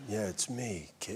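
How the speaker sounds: soft, breathy, low-register bedroom murmur. Showing the voice they once tried to do, in a very breathy, low-register bedroom voice. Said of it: "very breathy, low-register bedroom voice".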